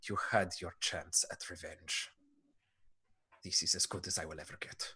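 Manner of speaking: muttering under breath. Voicing the Keeper shaking off a hunter: under his breath. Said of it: "in Elven and sort of under his breath says to you".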